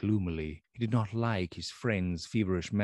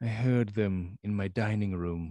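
ordinary delivery

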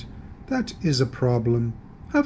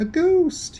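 very high, startled, surprised cry; 3 dB louder than usual. A character turns around and finds a ghost behind him, exclaiming. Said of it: "he exclaimed".

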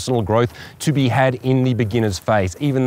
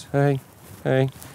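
weak, timid voice, not projected, quieter; 2 semitones higher, 4 dB quieter than usual. Showing the wrong way to greet someone when approaching, a weak unprojected greeting. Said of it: "It can't be like this".

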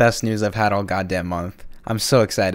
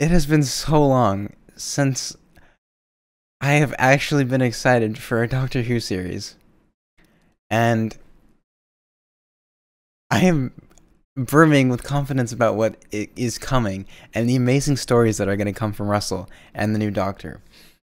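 moved, sincere, heartfelt, genuinely emotional outpouring; 2 semitones higher than usual. Reacting to news that the showrunner is returning: genuinely emotional. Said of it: "I'm getting genuinely emotional".

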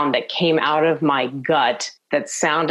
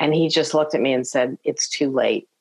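usual speaking voice

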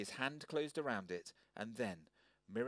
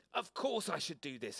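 huffy, indignant, loud, high-pitched harrumph; 5 semitones higher, 5 dB louder than usual. Narrator voices Peanut as Rockwell hands her pencil back, harrumphing. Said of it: "harumped Peanut".

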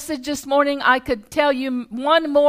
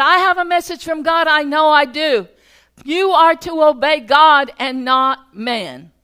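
put-on exasperated, frustrated, insistent man voice; 4 dB louder than usual. Retelling a stranger's words to an interpreter: imitating a frustrated man. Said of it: "he was frustrated".

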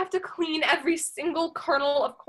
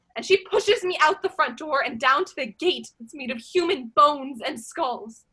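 ordinary talk

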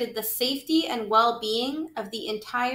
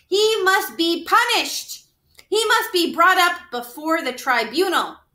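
furious, loud, high-pitched shouting outburst; 7 semitones higher, 6 dB louder than usual. Lester argues with Antoinette about the mouse council, shouted. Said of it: "shouted Lester".

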